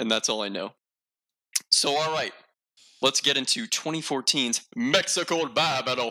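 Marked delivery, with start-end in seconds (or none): 4.8-6.1 overdone fake Spanish accent sliding toward Italian. Introducing the next topic, in an exaggerated put-on accent. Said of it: "I couldn't tell if that was Dracula or Mario".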